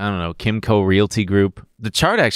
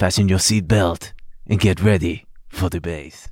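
put-on Dutch flight attendant accent; 2 semitones lower than usual. Redoing a favorite bit imitating a Dutch flight attendant: imitating Noel's Dutch flight attendant. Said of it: "him doing the impression of the Dutch flight attendant".

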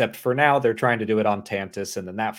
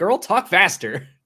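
mock yelling, loud and high-pitched; 9 semitones higher, 5 dB louder than usual. Retelling another speaker yelling at the screen: imitating someone yelling. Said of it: "You started yelling at the screen like".

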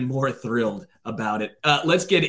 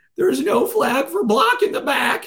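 very high-pitched voice that cracks; 13 semitones higher, 4 dB louder than usual. Retelling a referee's call, imitating Jeffers' cracking voice. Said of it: "His voice was cracking".

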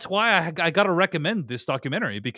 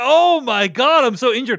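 loud, drawn-out, dramatic fake wail of pain; 7 semitones higher, 6 dB louder than usual. Retelling how a player faked an injury after a dramatic fall, imitating a dramatic fake-injured cry. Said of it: "He did the dramatic fall. He's like".

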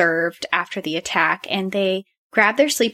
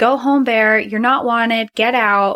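put-on raised, authoritative shout; 3 semitones higher, 3 dB louder than usual. Retelling how a camper shouted at a bear to leave: imitating someone shouting. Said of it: "So he starts shouting at this bear".

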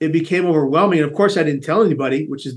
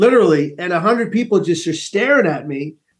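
ordinary delivery

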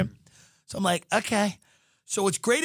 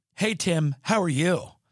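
super-friendly, overly familiar, chummy realtor-style voice. Speaker retells a phone call with a realtor: mimicking an overly familiar realtor. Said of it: "they're always super familiar with you".

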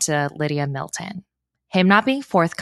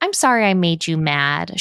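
put-on babyish, childlike voice. Retelling a woman's apology, imitating her baby voice. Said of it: "She'll like use this baby voice".

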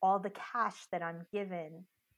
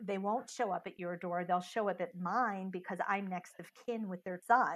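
ordinary delivery

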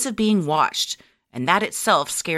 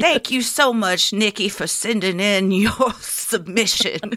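put-on old Southern grandma voice; 3 semitones higher than usual. Demonstrating a listener-requested voice while thanking them, in an old Southern grandma voice. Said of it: "That's my old Southern grandma voice".

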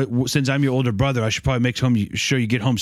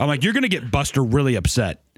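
ordinary delivery

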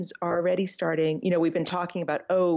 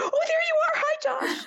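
mock, very high, thrilled, excited shriek. Recalling spotting josh on a live broadcast, retelling the scream. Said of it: "And I'm screaming".

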